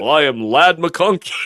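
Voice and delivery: put-on male newscaster voice.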